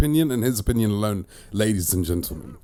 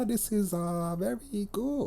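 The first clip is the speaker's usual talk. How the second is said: mock Thai accent, higher, much slower; 12 semitones higher, 9 dB quieter than usual. Mocking how different audiences react to a movie, imitating Thai people. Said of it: "you get the Thai people just be like".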